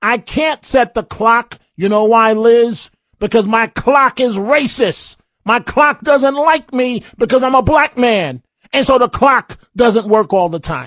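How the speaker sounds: sarcastic put-on voice. Mocking a borrowed line from the left, sarcastic mock quote. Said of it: "I'm being sarcastic".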